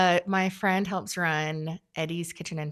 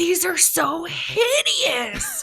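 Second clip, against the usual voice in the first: wide-eyed gushing, very high-pitched and very slow; 6 dB louder than usual. Retelling how art show visitors react to the pieces: imitating an excited visitor. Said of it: "just eyes wide open, so excited".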